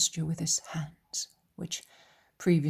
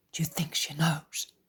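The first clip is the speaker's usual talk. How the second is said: very low, hushed voice. Reading a scene aloud, Peter asking the others: very low voice. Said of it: "asks in a very low voice".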